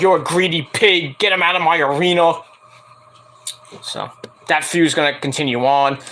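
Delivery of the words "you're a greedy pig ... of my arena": plain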